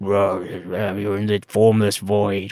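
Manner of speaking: really deep, slow, drawn-out growling voice. Giving the ancient reptilian brain a voice, in a growling deep voice. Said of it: "is this really deep voice".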